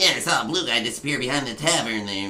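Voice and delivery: speaking like a goblin. A game master voicing goblins the party overhears: goblin voice. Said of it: "speaking goblin, you hear a few different voices".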